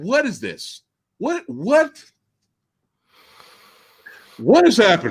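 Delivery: acted, baffled stammering, swooping bewildered disbelief. Retelling own reaction to a movie scene: imitating own past confusion. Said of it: "I was like".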